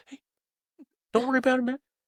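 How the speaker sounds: very high, squeaky cartoon-mouse voice. Imitating the listener trying to be approachable, very high-pitched imitation. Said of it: "Why you sound like Mickey Mouse?".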